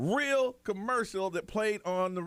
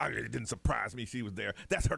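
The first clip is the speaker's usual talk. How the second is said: acted rough, creaky, bitter voice full of loathing; 9 semitones lower than usual. Retelling a jailed man's phone interview answer, imitating a hateful tone. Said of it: "you could hear in his voice".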